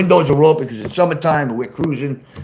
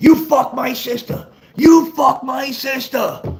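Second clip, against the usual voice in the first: put-on shrill, very high, drawn-out screaming; 11 semitones higher than usual. Retelling running at the kids: retelling own screaming. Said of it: "I'm screaming".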